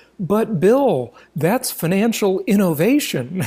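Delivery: deliberate, slow sarcastic tone. Replying to another speaker's point about the bank bailout: mock sarcastic tone. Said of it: "I'm gonna say sarcastically".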